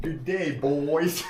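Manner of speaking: very high, very loud Australian accent. Greeting the group in a put-on Australian accent. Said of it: "John is trying his best Aussie accent".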